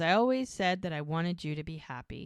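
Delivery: ordinary talk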